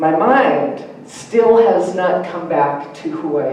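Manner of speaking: ordinary talk, nothing marked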